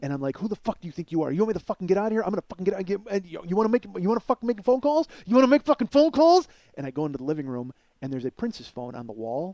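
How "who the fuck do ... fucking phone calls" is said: put-on furious, raging outburst. Retelling getting an inch from her face: retelling own past rage. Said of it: "I lost my fucking mind".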